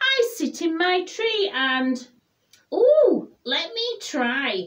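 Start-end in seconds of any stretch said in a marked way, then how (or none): 2.7-4.7 called out with a whoop. A character looking for a hug hears the owl and asks to try, whooping. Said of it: "whooped Douglas".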